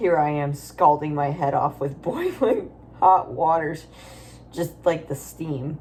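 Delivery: ordinary talk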